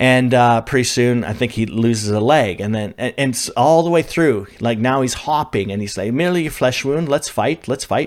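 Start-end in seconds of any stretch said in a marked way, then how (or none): 6.1-8.1 bad fake British accent, much higher. Retelling a fighter who keeps losing limbs, in a terrible British accent. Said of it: "Terrible British accent".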